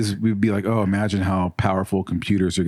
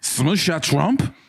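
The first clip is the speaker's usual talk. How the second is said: put-on acted drunk voice, pitched higher; 8 semitones higher than usual. Imitating own drunk reaction on learning someone shot Trump: acting drunk. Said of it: "my impression of me when I found out".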